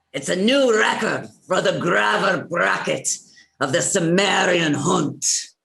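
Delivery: put-on Irish-accented voice. Reading a line again for a recording: irish accent. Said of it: "'cause it's Irish".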